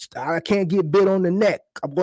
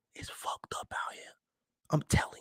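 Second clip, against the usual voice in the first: whisper kept very hushed, under the breath. Speaker says they worry their mom might be watching, whispering. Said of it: "I'm whispering".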